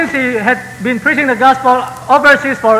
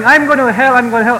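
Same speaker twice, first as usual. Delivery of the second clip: plain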